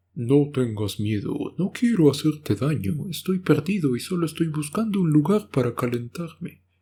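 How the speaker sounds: high talking bear voice. Reading a story aloud, voicing the bear who talks to two sisters: bear voice. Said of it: "la voz del oso".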